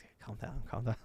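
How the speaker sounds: barely voiced, hushed, soothing whispered shushing. Retelling how a friend whispered when the ride went dark: retelling a whisper. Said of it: "starts whispering like".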